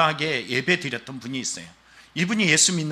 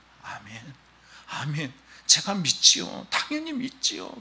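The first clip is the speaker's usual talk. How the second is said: weeping through the words, tearful; 3 dB quieter than usual. Retelling an elderly person's tearful answer of faith: imitating someone crying. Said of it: "그러면서 또 막 울어요".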